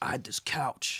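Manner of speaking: breathy whispered voice, mostly breath. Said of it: "I gotta do the voice".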